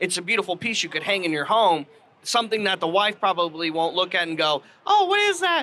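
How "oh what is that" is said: voice pitched way up, very high. Picturing a wife objecting to décor hung at home: imitating a wife. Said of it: "I do a great wife impression".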